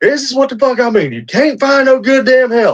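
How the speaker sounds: mock very high, screeching, screaming rant. Retelling a video where a boss screams at a worker: imitating someone screaming.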